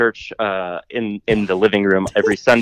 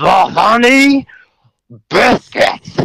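very high, loud scream, "honey" stretched out; 12 semitones higher, 5 dB louder than usual. Retelling how the listener kept leaning over and screaming the order: imitating someone screaming. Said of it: "kept leaning over me and screaming".

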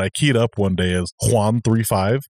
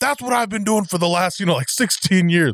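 put-on East Coast accent, very high-pitched; 9 semitones higher than usual. Retelling to another person what a man said about phonetics, imitating his East Coast accent. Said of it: "in his East Coast accent".

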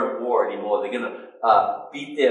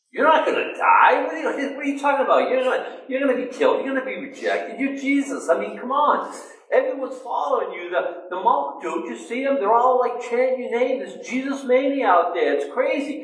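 put-on protesting, objecting tone; 13 semitones higher than usual. Retelling Peter's reaction to Jesus: imitating Peter protesting. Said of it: "because of what Peter says".

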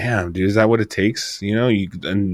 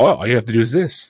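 put-on businesslike, brusque therapist voice; 3 semitones higher than usual. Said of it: "about business he was".

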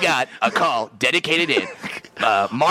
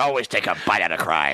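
very deep, low cartoon dog voice; 9 semitones lower than usual. Asked for a crime dog soundbite, speaker does a McGruff the Crime Dog impression. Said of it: "You're pretty good at impressions".

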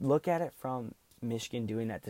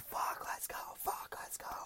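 mock, breathy, breathless, whispered yell. Retelling screaming out the window: retelling a scream. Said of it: "I'm screaming".

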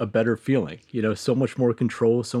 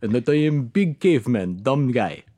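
put-on big dumb caveman thug voice, Ukrainian accent. Describing how the speaker thinks their own voice sounds, in a ukrainian thug voice. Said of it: "I think I sound like this".

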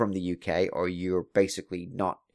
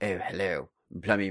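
put-on British accent; 4 dB quieter than usual. Talking about her British accent, imitating it. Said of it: "her British accent's pretty good".

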